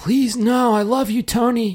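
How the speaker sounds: very high, desperate, pleading, begging cry. Retelling what the women said when he turned their light off: mock begging. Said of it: "Are like begging".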